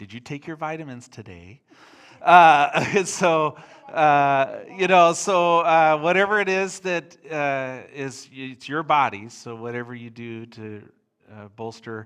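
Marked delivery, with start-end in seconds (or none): 0.0-1.6 rapid-fire, fast-paced voice. Speaking to listeners, the speaker talks like their mom: imitating their mom. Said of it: "I'll talk like my mom".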